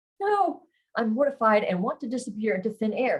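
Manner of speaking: ordinary delivery, nothing marked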